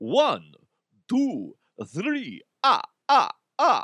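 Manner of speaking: swooping put-on vampire character voice. After his Russian accent slipped, the speaker counts in a Count impression. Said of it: "sounded like the Count".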